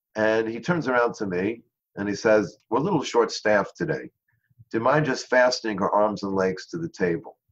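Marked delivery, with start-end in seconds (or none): none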